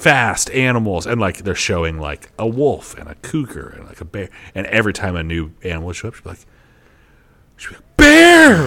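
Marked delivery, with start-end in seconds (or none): 8.0-8.7 high, loud excited shout. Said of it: "And, like, so excited".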